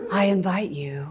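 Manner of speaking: overly breathy, airy voice with too much breath. Listing voice faults to listeners and demonstrating one: overly breathy voice. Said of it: "overly breathy voice".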